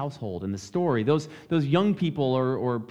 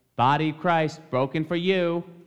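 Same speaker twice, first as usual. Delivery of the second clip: put-on tiny child voice, slower. Telling a story, voicing a child calling out during a worship service: little child's voice. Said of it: "they hear a little voice that says".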